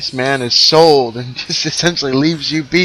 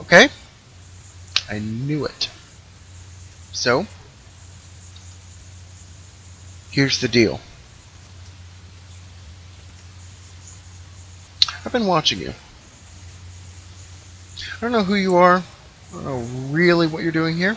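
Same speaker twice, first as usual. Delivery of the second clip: quiet hushed voice, quieter; 9 dB quieter than usual. Voicing a character who leans closer to a player: hushed tone. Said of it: "in a hushed tone says".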